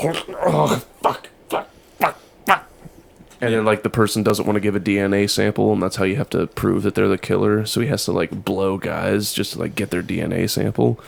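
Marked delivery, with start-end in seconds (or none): 0.0-2.7 breathing hard, high, slow psyching-up curses. Acting out psyching up for a shot: imitating psyching up, breathing hard. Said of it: "coming back up and breathing, like".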